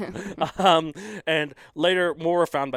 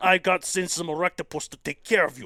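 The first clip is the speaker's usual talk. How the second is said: put-on Russian accent in English; 4 semitones higher than usual. Showing off accents to another speaker, saying a line in a Russian accent. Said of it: "Is that like Russian?".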